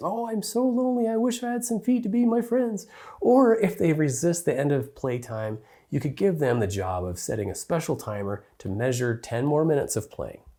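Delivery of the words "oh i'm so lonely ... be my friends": squeaky, very high, silly talking-shoe voice. Showing how a parent can make the shoes talk to a child: funny talking-shoe voice. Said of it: "pretend the shoes are talking to them in a funny voice".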